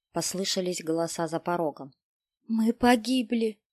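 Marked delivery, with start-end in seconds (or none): 2.4-3.5 horrified whisper, much higher pitch. A peasant woman holds her sons close as voices shout at the door, horrified whisper. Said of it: "прошептала в ужасе крестьянка".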